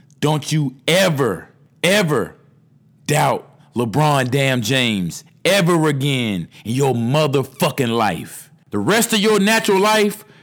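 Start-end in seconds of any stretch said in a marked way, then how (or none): 0.2-8.5 real slow, deliberate, drawn out word by word. Saying it one more time for followers: real slow. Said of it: "real slow for you motherfuckers".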